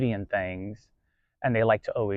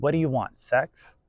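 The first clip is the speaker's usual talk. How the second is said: mock upset tone, much higher pitch; 3 semitones higher than usual. Retelling what a woman he met said to him, retelling her upset question. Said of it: "she got very upset and quickly looked at me and said".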